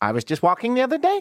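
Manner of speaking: put-on high Valley Girl upspeak, rising at the end. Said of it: "going Valley Girl at the end and going up".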